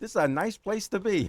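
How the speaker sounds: put-on New York accent, pitched slightly up. Retelling what he said about texas on a visit, in his new york accent. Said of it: "in my New York accent".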